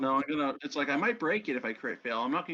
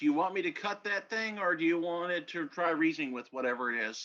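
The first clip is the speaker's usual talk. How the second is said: ordinary delivery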